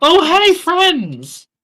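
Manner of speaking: very high, sarcastic, mock-friendly. Voicing a gator character greeting the party: sarcastic greeting. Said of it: "he's just being sarcastic".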